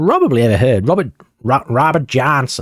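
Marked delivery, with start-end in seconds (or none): 0.9-2.6 clumsy, unconvincing put-on American accent. Saying a very American-sounding name as an impression: bad put-on American accent. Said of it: "That was my impression at an American accent".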